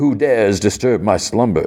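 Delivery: plain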